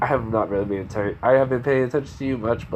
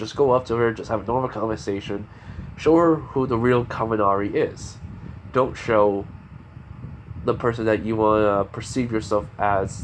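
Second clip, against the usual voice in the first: plain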